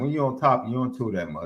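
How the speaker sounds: ordinary delivery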